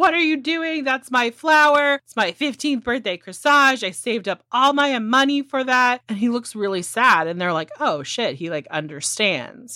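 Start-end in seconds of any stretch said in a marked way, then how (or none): 0.0-6.0 high-pitched, furious, put-on angry scream. Retelling how Sarah gets up in Harry's face; retelling Sarah screaming. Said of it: "screams at him".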